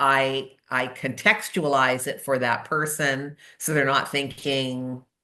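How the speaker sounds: ordinary talk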